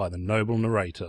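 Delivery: ordinary delivery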